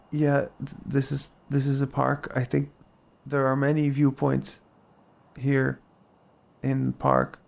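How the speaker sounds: put-on hushed, choppy staccato speech. Retelling what a stranger in the dark park answered: imitating quiet staccato speech. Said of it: "the staccato nature of how he was speaking".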